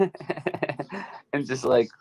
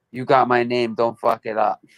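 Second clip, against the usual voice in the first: put-on thick, heavy Ukrainian-American accent. Quoting his grandfather's words before he passed away, in a strong american ukrainian accent. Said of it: "like in a real strong, like American Ukrainian accent".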